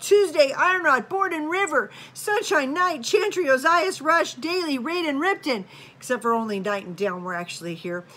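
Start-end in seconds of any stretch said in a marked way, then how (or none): 0.0-5.6 acted-out, loud, high-pitched hollering, one after another. A mom recounting calling names down the stairs: retelling yelling names. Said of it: "So I yell".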